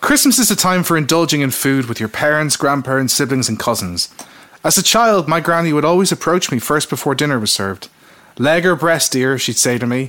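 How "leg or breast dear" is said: plain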